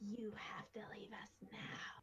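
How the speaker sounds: big, dominating, slow, scariest voice. Puffing up as big as possible to drive someone away, in a scariest voice. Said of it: "I say in my scariest voice".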